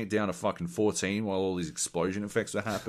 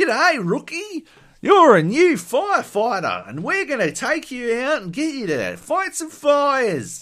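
over-the-top broad Australian, very loud, high, shrill, booming; 10 dB louder than usual. Describing a goofy Australian VR firefighter game, voicing a guy in it, extremely Australian voice. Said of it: "in his extremely Australian voice".

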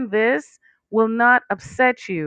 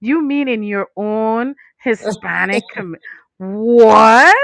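loud sarcastic fake surprise, drawn-out what; 6 dB louder than usual. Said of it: "Sarcasm, sorry".

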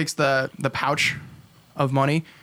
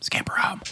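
quiet whispered voice; 5 semitones higher, 5 dB quieter than usual. Voicing a character who sends a broom home: whispering. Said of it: "he just whispers".

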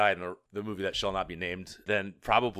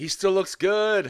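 mock shrill, high, loud drunken hollering; 11 semitones higher, 6 dB louder than usual. Speaker retells a drunk friend at a concert, imitating Joel yelling. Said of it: "he just kept yelling".

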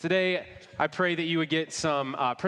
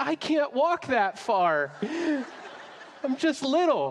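put-on teary little-kid voice, very high, slow, crying; 10 semitones higher than usual. Retelling a childhood reply to the mother: imitating own childhood crying. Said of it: "I had just immediately started crying".

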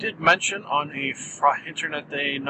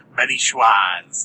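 sly delivery, raised to a bit louder; 4 semitones lower, 5 dB louder than usual. Describing how he says his own name, sly Ben Schwartz impression. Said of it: "slyly. ... Kind of thusly".

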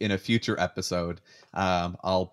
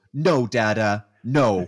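put-on loud little toddler voice in an outburst; 3 semitones higher, 6 dB louder than usual. Retelling what a two-year-old said when she ran up: imitating a two-year-old daughter. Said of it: "looks at me and goes".

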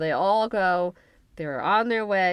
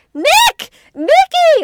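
shrill, very high, very loud swooping screams; 15 dB louder than usual. Recapping a story where Amy keeps screaming for Nick, imitating Amy screaming. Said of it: "Screams for Nick".

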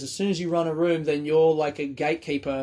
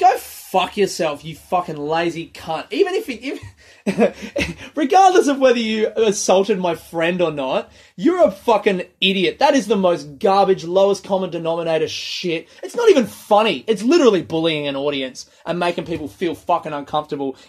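loud, fired-up, furious, heated angry rant; 3 semitones higher, 7 dB louder than usual. Ranting about a comedian's joke that bullies the audience: fired up, angry rant. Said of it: "the first time I get fired up talking about this".

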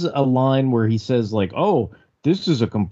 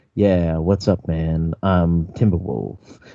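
smooth, cool dude voice, kept smooth and cool; 9 semitones lower than usual. Imitating how a cartoon character Timberwolf talks: Timberwolf's smooth cool voice.

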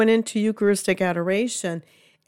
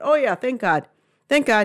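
put-on casual, throwaway, offhand afterthought tone. Acting out the tone of a remark, mock-offhand afterthought tone. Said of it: "you listen to the tone of voice. It's kind of an afterthought".

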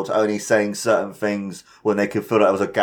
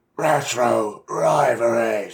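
strained, pained-sounding wrestling promo voice; 2 semitones higher than usual. Announcing a segment title in a put-on announcer voice: Vince McMahon voice. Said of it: "do, like, a voice to it, like Vince McMahon".

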